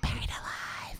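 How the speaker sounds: soft, creepy whisper. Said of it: "He'd be like".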